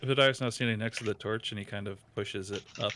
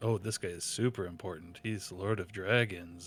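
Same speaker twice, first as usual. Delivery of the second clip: semi-condescending mocking tone; 2 semitones lower than usual. Reading out a lord's titles in character: semi-condescending mocking tone. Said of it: "semi-condescending tone, like mock".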